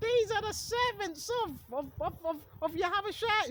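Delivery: very high, drawn-out, spooky witch voice. Acting out a woman with a spirit of divination, put-on witch voice. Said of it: "She probably done it in a witch voice".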